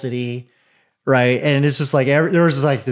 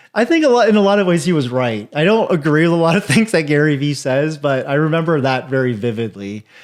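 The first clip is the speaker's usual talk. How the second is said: ordinary talk, nothing marked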